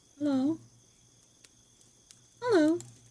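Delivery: gentle, high-pitched creature voice, called out. A creature in a forest clearing greets a human, in a gentle creature voice. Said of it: "The gentle voice comes from the creature".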